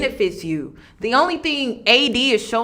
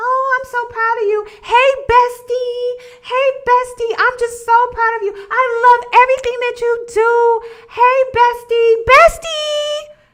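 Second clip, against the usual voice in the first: syrupy, fake-bestie gushing, very high; 13 semitones higher than usual. Complaining about fake women at empowerment brunches, mocking their fake gushing praise. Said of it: "too many fake women like".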